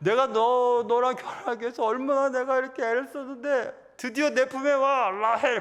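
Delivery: put-on giddy, overjoyed voice. Retelling Jacob's words to his bride, acting out Jacob's delight. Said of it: "야곱이 막 좋아가지고".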